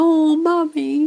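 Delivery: high, play-acted, spoken through laughter. Retelling her daughter hugging her after a small win, imitating daughter laughing. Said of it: "my daughter's laughing and hugging me".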